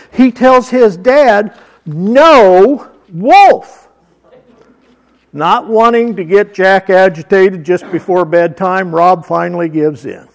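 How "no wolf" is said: mock-stern put-on toddler voice. Retelling how a toddler covered his dad's mouth and told him, imitating a stern toddler. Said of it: "in the sternest voice a little toddler can come up with".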